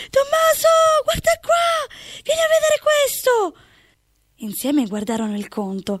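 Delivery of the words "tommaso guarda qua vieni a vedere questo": very high, thrilled, excited shout. Rushing to another house with the bill, calling someone over: shouted. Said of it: "Gridò".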